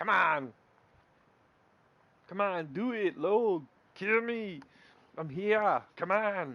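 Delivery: bad Austrian accent, loud, high, drawn out. Shouting a challenge as a joke impression: bad Arnold Schwarzenegger Austrian accent. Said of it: "that was my bad Arnold Schwarzenegger impression".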